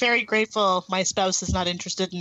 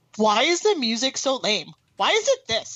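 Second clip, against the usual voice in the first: play-acted, swooping, needling, teasing gripe; 4 semitones higher than usual. Retelling yelling at someone playing Doom Eternal to annoy him, retelling a yell. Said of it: "I yelled at Scott".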